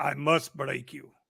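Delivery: put-on Ukrainian accent. Repeating a famous line to annoy russian friends, in a put-on ukrainian accent. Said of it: "in my Ukrainian voice".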